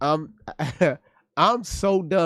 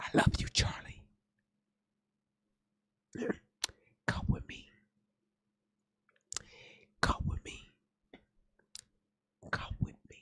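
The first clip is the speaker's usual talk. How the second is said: breathy, hushed, barely voiced whisper; 13 dB quieter than usual. Retelling what the nurse said to Charlie: imitating a whisper. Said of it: "this nurse, uh, was whispering to him".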